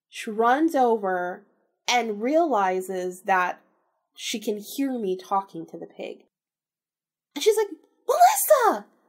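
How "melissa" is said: very high, shrill, loud yelling. Retelling how mom found her with the pig: imitating mom yelling. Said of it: "yelling at me".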